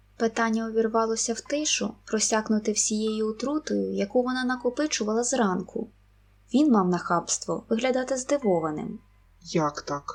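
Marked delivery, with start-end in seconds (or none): 9.4-10.2 puzzled, bewildered voice, much lower. He answers her sudden question, puzzled. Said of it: "спантеличено запитав він".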